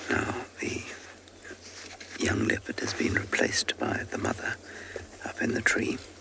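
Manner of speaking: very soft, hushed whisper. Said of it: "So I'm whispering very softly".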